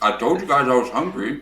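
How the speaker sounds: speaking with mouth full. Caught eating by the others, the speaker answers them, talking while eating. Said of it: "Why are you eating right now?".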